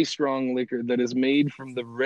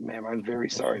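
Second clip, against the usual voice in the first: mock mortified, deeply embarrassed, sheepish tone; 3 semitones lower, 8 dB quieter than usual. Retelling the grandfather apologizing to the woman: imitating a mortified apology. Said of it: "he just was mortified".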